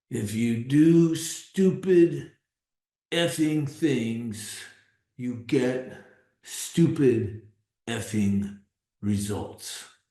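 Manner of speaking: gruff delivery. Quoting what he would say to someone before the whole group, gruff voice. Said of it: "kind of in a gruffy voice".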